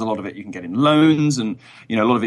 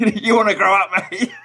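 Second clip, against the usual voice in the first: very high, shrill yell; 10 semitones higher than usual. Retelling a drunken row seen in real life, imitating someone yelling. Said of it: "is like yelling at Peter Pan".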